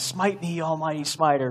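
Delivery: put-on screaming movie-character voice. Retelling a movie scene where the character yells at God: imitating Bruce Almighty screaming. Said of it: "where he's screaming".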